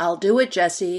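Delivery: very loud, level, steady carrying call. A man calls out to someone behind another man's shoulder: calling out, steady and carrying. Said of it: "Michael called out, voice steady and carrying".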